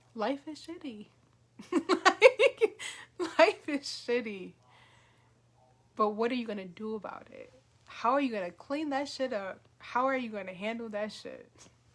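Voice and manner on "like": loud, high burst of laughter. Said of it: "and I'm laughing".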